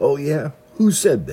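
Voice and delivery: high, loud, taunting holler. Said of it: "somebody would holler out".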